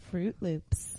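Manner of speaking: sultry, breathy, sexy whisper. Saying Fruit Loops after being asked to say it sexy, sexy voice. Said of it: "Say like Fruit Loops like that sexy".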